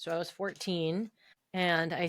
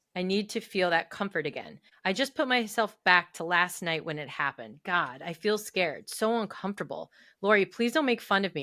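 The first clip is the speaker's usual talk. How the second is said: plain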